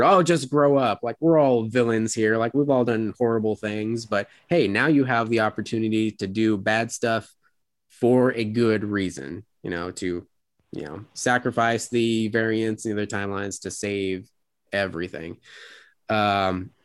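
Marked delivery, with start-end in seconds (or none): none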